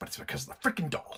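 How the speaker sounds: speaking in a whisper. Ranting about a doll to the other speaker, whispering. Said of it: "I know I'm whispering".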